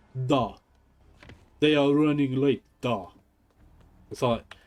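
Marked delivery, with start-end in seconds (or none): 0.3-3.1 pretty terrible, slow, put-on Russian accent. Repeating a game line after characters speak: terrible Russian accent. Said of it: "It's my Russian accent. It's pretty terrible".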